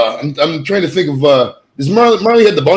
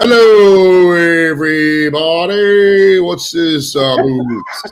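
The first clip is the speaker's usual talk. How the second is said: put-on, slow, impaired-sounding voice; 2 semitones higher than usual. Mocking a friend as if hit in the head: imitating Janice hit by a boulder. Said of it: "She'd be like".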